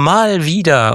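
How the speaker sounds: mal wieder stressed, stretched slow and high.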